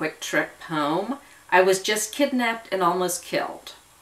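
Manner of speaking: ordinary delivery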